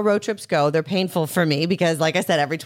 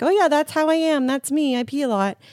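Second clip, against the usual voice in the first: high, breezy, shrugging tone.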